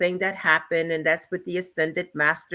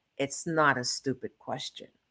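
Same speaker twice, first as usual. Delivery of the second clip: put-on muttering under breath, lower and quieter; 4 semitones lower, 8 dB quieter than usual. Retelling a reply to a teacher, imitating muttering under breath. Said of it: "under my breath, I said".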